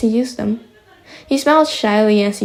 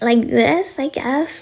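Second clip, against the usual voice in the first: put-on squeaky high little-kid voice; 4 semitones higher than usual. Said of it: "I had a squeaky as fuck voice".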